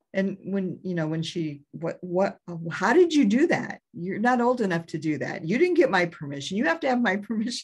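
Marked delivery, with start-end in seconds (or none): 1.7-7.6 high-pitched, angry, scolding tirade. Retelling a mom going off about a tattoo: imitating an angry mom. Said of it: "And she just went off on me".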